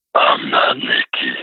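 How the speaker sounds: darkest demonic growl, very low, deep satanic voice. Retelling a voice heard from the closet, in the deepest satanic voice. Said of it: "the most deep satanic voice you could ever imagine".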